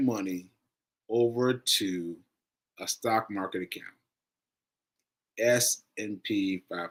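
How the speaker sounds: slow, measured, deliberate, unhurried delivery. Speaker keeping up a new pace, talking slower. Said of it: "now that I'm talking slower".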